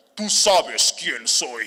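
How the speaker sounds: put-on loud, demonic possessed voice. Retelling scaring callers who kept phoning, in a demonic possessed voice. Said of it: "les empiezo a hablar con voz de endemoniado".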